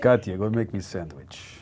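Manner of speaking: put-on deep Ukrainian accent. Quoting how a man talks to a woman, in a deep Ukrainian accent. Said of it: "Deep Ukrainian voice".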